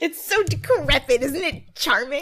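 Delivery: put-on high, ditzy rich-girl voice. Mocking someone gushing over poor people's sheds: Alexis Rose impression. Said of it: "that's my Alexis Rose impression".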